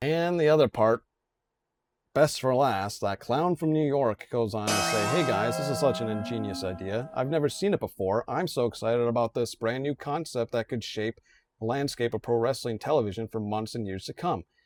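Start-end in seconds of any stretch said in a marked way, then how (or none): none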